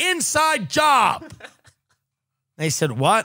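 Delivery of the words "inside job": high, blurted-out instinctive scream. Recalling hearing the news in Miss Rice's history class, acting out what they screamed out. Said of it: "the first thing I screamed out in the class".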